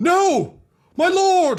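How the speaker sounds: anguished scream, very high and very loud. Voicing an Imperial Guard officer rushing in: screaming in anguish. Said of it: "she just screams".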